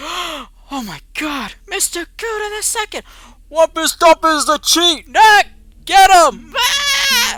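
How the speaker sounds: amazed, horrified shriek, very high and very loud. Voicing the crowd turning on Wumpus Dumpus: crowd in horror and amazement. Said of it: "they're just like".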